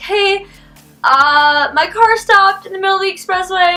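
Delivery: high-pitched, tearful crying. Recounting calling an aunt after the car stopped on the expressway, retelling crying into the phone. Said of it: "I'm like crying into the phone".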